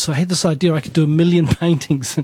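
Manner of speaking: quick delivery, laughing through the words. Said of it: "I'm laughing now".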